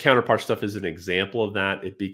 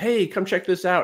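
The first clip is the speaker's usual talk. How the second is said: yelled, raised, pitched-up calling out; 11 semitones higher than usual. Retelling how someone called out to come see something: imitating someone yelling. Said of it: "he yelled out".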